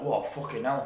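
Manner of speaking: put-on Glaswegian accent. Retelling what a man said while eating a sandwich: imitating his Glasgow accent. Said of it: "in his accent".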